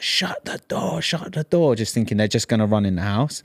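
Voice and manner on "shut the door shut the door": frantic, high, urgent scream. Retelling a robbery, reenacting screaming at someone to shut the door. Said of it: "I'm literally screaming at you".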